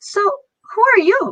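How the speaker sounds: very slow, sweet, bubbly, peppy, high and drawn out. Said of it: "so peppy, so cheery".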